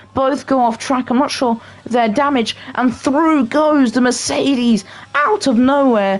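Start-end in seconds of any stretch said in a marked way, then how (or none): 2.7-6.2 voice cracking partway through the line. Race commentator calling a car coming through out of nowhere, voice cracking. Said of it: "Sorry for the voice crack".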